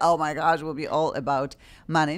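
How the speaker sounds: plain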